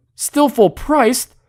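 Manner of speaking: mock outraged disbelief, high and loud.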